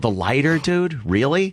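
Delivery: plain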